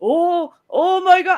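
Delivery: play-acted, hammy, very high-pitched, drawn-out outcry. Imitating how he sounds when playing it up: imitating a played-up reaction. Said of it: "it sounds like in his f-, voice, like".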